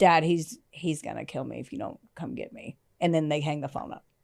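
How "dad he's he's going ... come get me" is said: worn-out, beaten-down, defeated voice. Retelling a phone call, quoting a son begging his dad, imitating Christy's monotone, beaten-down voice. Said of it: "he's so monotone and beat down that".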